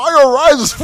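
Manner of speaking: loud, high proclaiming voice. Mocking a movie voice he calls terrible: Bane voice. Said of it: "that Bane voice".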